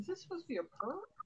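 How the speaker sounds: quick, soft, high-pitched muttering.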